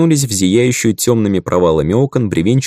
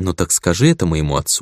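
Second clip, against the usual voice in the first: usual speaking voice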